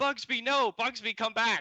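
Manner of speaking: frantic, very high, loud, panicked yell. Narrating a scene, the speaker voices a woman calling after her escaping pet: yelling. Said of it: "and then she yells".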